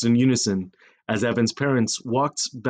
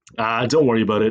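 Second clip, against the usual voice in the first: ordinary delivery, nothing marked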